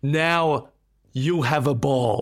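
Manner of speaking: every word drawn out slowly. Speaker taking a turn at impressions after Martin, Donald Trump impression. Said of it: "just remember I'm being Donald Trump".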